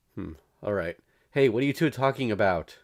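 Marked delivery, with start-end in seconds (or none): 1.3-2.6 loud, high call-out in a big voice. Reading a scene, calling out to two people talking secretly: loud voice. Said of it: "Seems a loud voice did the trick".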